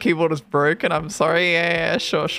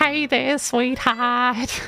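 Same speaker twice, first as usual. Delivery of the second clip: put-on high old-person voice; 7 semitones higher than usual. Imitating old people who call others sweetheart: imitating an old person. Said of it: "I get called honey by old people".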